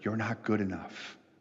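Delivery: soft, hushed, doubtful half-whispered voice. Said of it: "Something whispers".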